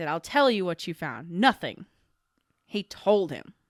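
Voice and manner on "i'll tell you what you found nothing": put-on obnoxious, jerk-like manner. Correcting another speaker's delivery, the speaker repeats Kirk's line, sounding like a jerk. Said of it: "he sounded like a jerk at that moment".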